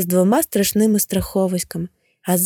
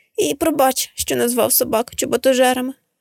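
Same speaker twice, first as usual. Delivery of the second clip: put-on sniffling through tears, higher pitch; 4 semitones higher than usual. A little sandal finishes telling his whole story, sniffling. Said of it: "шморгаючи носом".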